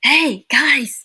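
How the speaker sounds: stage whisper, loud. Showing how the character whispers to the group: loud stage whisper. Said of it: "whispering, but you're kinda like".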